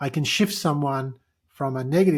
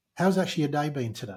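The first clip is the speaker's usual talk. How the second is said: caring, empathetic delivery; 3 dB quieter than usual. Showing how to ask someone how their day has actually been, in an empathetic tone. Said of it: "I'm in a more empathetic tone".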